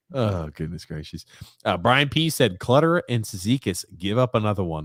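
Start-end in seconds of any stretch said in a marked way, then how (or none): none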